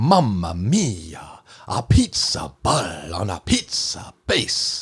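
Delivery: full-blown, exaggerated Italian accent, swooping, very slow. Asked for an Italian accent, speaker mimics the show's characters: stereotypical Italian accent. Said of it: "I want to hear your best Italian accent".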